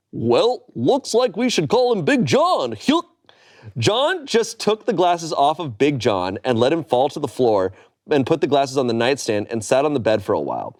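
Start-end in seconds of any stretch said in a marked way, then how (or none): 0.1-2.7 high, swoopy cartoon dog voice. Cheering up a disappointed man, the speaker does a Goofy impression. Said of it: "In my best Goofy impression".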